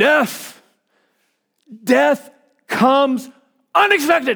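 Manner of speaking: mock preacher's very loud cry. Describing a scene where the preacher opens his Bible, retelling a preacher's very loud cry. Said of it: "in a very loud voice he goes".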